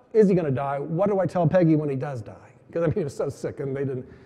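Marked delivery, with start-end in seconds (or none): none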